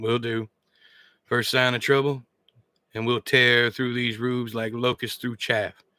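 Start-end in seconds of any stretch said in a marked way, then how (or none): none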